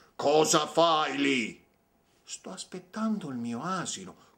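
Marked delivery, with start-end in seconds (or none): 0.2-1.6 loud, booming, huge storybook ogre voice. The angry ogre comes up to the farmer who did not run: ogre's big voice. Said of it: "con il suo vocione gli chiese".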